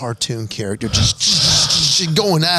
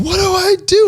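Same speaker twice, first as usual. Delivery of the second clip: very high-pitched, tearful, terrified crying voice; 4 dB louder than usual. Retelling his wife stuck in the current, crying: imitating crying and scared. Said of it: "she's crying and scared to death".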